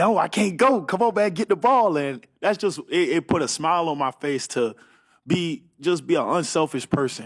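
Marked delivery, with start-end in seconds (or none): 0.0-2.0 high, loud, pressing, mock-urgent yell. Player recalls yelling at a teammate to grab a fumble: retelling own urgent yell. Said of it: "I'm yelling at him like".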